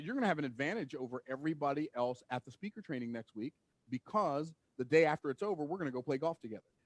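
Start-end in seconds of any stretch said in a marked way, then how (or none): none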